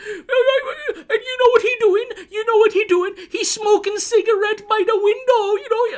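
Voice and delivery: very high-pitched wailing, crying, bawling sob. Retelling someone talking to a cop, imitating someone bawling and crying. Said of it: "just bawling and crying".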